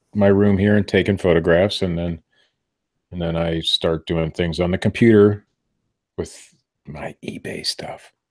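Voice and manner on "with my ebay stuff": slow hushed whisper. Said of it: "you have to, like, whisper".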